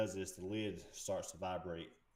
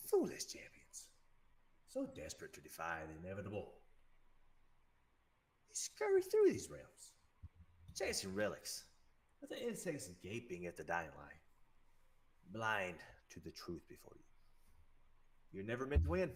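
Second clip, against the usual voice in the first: very raspy, slithery voice on every word. Game master voicing Mossfoot stepping toward the players, Mossfoot's deep raspy slithery voice. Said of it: "his voice deepens with like a very raspy, slithery sound".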